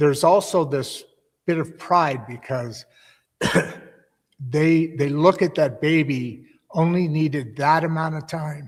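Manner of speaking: choked-up voice, welling up with emotion. Explaining a belief to a listener, getting choked up. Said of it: "I'm getting choked up over this".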